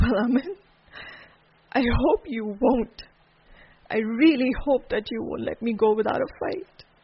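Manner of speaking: loud, tearful, crying through the words. Maha answering Amin in a drama scene; crying. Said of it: "Why are you crying?".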